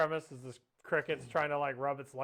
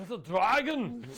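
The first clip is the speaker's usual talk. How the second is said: put-on horrible Scottish accent, much higher, louder; 8 semitones higher, 6 dB louder than usual. Joking with a co-host about a film cast's accents: horrible How to Train Your Dragon accent. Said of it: "That was a horrible, horrible accent".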